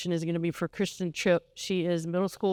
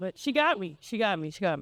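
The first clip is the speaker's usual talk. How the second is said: tearful voice, speaking through tears. Speaker at a Learning Center recognition, apologizing to mister Castle, crying. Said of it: "but I'm crying".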